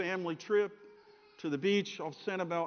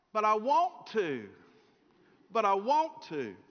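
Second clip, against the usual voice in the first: put-on sing-song, childlike Southern voice, pleading; 4 semitones higher than usual. Retelling how she answered when coaxed to stay by the ocean; childish southern voice. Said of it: "in her childish southern voice".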